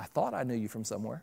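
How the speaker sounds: very low, hushed, sarcastic muttered undertone. Retelling what a child muttered back to his mother: mock-sarcastic mutter under breath. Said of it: "Under his breath, sarcastically".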